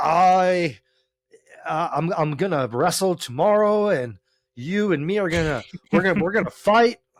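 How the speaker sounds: mock stiff, unnatural, awkward delivery. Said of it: "be natural with it".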